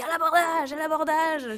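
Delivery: hoarse, raspy pirate yell, high and slow. Retelling how Basile shouts in his pirate voice, imitating Basile's raspy pirate shout. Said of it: "une espèce de voix un peu rauque et il nous crie".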